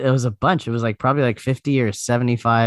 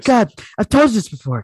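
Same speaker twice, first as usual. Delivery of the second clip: put-on, exasperated voice; 9 semitones higher, 3 dB louder than usual. Continuing the impression of a friend's exasperated reply: exasperated impression of a friend. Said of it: "That's a good impression".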